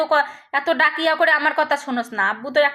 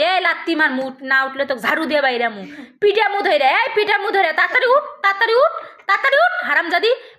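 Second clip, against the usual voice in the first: put-on angry tone. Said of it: "তখনই তো কই".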